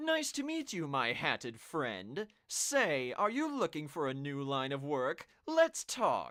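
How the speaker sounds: put-on haughty voice. Voicing a guy until knowing him for real, in a stereotypical pompous voice. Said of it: "I'm just going to give you a stereotypical pompous voice".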